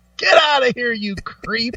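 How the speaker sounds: put-on old-timer voice, scolding. Joking about the word creep, the speaker says it in an old guy voice. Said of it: "just sounds like an old guy saying it".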